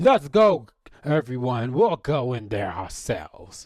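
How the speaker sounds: put-on loud, swooping drunken yell, drunk man bellowing. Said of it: "The drunk yells out".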